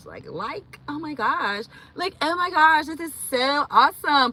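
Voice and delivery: put-on high-pitched, gushing valley girl chatter. Showing how they sometimes sound like a whole valley girl: valley girl voice. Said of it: "I be sounding like a whole valley girl".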